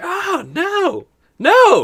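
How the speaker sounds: yelling out. Voicing a character slashed in the back by a player: screaming. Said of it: "as he's screaming".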